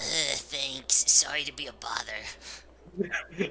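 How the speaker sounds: put-on elderly grandmother character voice. Ending an acted phone call, speaking in Grandma Ruby voice. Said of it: "you just made it sound like an old grandma".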